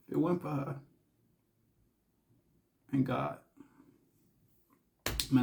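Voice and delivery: choking up. Recalling support from brother and wife, choking up. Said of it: "I can't keep choking up".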